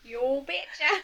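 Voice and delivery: put-on Minnesota accent. Joining the joke about a Minnesota accent: put-on Minnesota accent.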